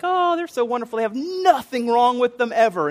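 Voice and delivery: high, gushing, lovestruck, infatuated voice.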